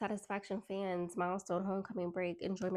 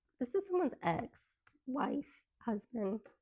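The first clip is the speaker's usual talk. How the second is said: breaking, cracked voice mid-line; 4 semitones higher than usual. Reading tarot cards for listeners, voice cracking. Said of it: "y'all notice how my voice cracked".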